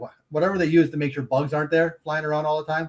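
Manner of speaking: plain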